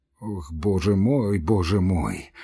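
with a sigh. A man answers his best friend's plea for help with a sigh. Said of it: "вздохнул Самойленко, почесываясь".

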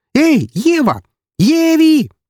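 very high, swooping, delighted joyful shout. A woman calls out from the side in a joyful shout. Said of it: "раздался со стороны радостный женский крик".

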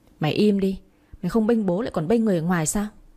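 plain

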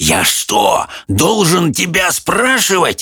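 high, hissed, hissing through every word. Answering the demon's mumbled question, hissing. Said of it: "прошипел Хоул".

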